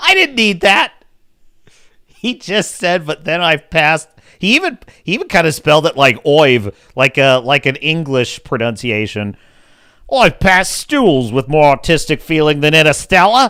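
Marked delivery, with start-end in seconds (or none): 10.2-13.5 put-on Australian accent. Quoting what another person said, in an aussie accent. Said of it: "that was more of an Aussie accent".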